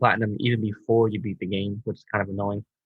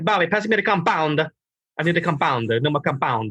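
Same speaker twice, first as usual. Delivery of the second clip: put-on thick Italian accent, pitched up, calling out; 6 semitones higher than usual. Quoting an italian painter and plasterer, heavy italian accent. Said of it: "really Italian Italian with a heavy accent".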